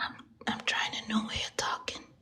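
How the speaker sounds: whispered voice. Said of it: "Why are you whispering".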